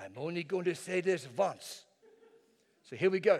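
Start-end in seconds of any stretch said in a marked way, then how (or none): 0.0-1.8 put-on, comedic, sitcom-style French woman's accent. Recalling a lady's line from a comedy show, in an 'Allo 'Allo! French woman voice. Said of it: "this lady that talked like a French woman".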